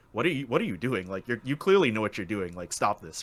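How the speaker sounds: plain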